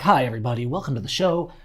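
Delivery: exaggerated, over-the-top radio announcer delivery. Showing how you can talk nice on YouTube, over-the-top radio voice. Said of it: "that over the top radio voice".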